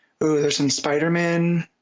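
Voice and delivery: ordinary talk, nothing marked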